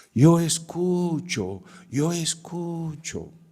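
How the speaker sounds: shout, pitched very high. Telling how someone in the crowd shouted during a talk, imitating someone shouting. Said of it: "alguien gritaba".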